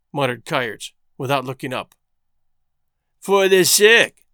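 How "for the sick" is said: mocking, scornful echo with raised pitch. One man throws another man's excuse back at him, mocking. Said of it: "mocked Carlier".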